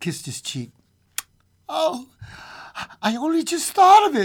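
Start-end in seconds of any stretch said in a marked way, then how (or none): 1.7-4.3 very high, shrill, loud, frantic hysterical outburst. The old woman bends over and kisses her husband's cheek: said hysterically. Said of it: "she said hysterically".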